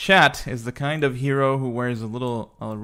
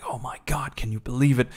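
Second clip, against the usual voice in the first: hushed, excited, gossipy half-whisper. Telling a story about castle guards talking to each other, kind of half-whispering. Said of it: "They're kind of whispering".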